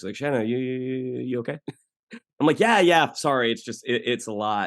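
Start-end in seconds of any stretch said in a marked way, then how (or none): 0.1-1.6 put-on Australian accent, mumbled indistinctly. Retelling how the director came over to check on her, mumbly Australian voice. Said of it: "Australian guy who had a very kind of mumbly quality to his voice".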